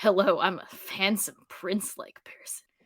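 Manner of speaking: put-on seductive voice. Imitating an actor trying to sound seductive: imitating Dean Winters sounding seductive. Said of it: "Dean Winters is trying to sound, like, all sexy, like, seductive".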